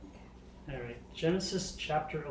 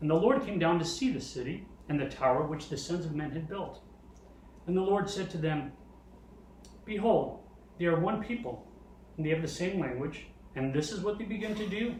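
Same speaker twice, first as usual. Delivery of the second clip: ordinary delivery, nothing marked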